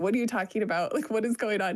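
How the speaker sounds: put-on upset, distressed voice. Retelling talking with the owner about permits, imitating own upset voice. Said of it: "I would just kinda get upset and I would just be like".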